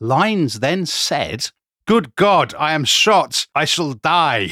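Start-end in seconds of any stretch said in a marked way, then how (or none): 1.9-4.5 mock theatrical, old-fashioned stage declaiming. Retelling what a shot man then said, in theatrical Shakespearean style. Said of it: "in very Shakespearean style".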